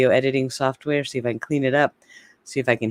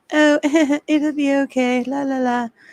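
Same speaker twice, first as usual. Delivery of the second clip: very high, drawn-out, fake reassuring tone; 13 semitones higher than usual. Discussing a trial, imitating Lori's fake high tone. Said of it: "That fake high tone".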